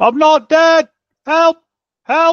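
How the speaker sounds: very high-pitched, loud shouting cries. Being buried by unseen figures, calling out to them: shouting for help. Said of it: "between your shouts".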